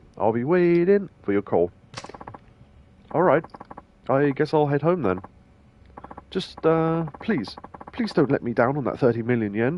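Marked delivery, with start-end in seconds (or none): 4.1-9.8 desperate, begging, pleading character voice. Voicing a desperate character asking not to be let down: his voice a bit quicker, desperate. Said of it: "I'm trying to do his voice a little bit quicker 'cause he's desperate".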